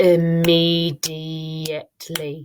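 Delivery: immediately slowed, broken syllable by syllable. Breaking a word apart: immediately, slowly by syllables. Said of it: "I'm going to say immediately, slowly, and break it into syllables".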